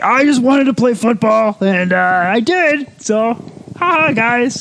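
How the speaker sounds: very high cartoon frog puppet voice. Describing a favorite NFL player's voice, imitates him in a Kermit the Frog voice. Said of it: "Kermit the Frog just comes pouring out of his mouth".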